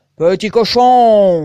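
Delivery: very loud, booming big wolf voice, cochon drawn out. Reading a fairy tale, the wolf calls to the little pig: big wolf voice, shouting. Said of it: "cria-t-il de sa grosse voix".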